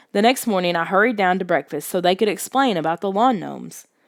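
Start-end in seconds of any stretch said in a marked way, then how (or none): none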